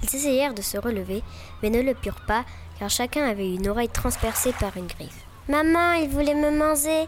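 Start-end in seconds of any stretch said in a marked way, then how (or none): 5.5-7.1 little chick voice, high, loud cry. Reading a story, the chick calls to its mother, crying out. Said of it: "cria le poussin".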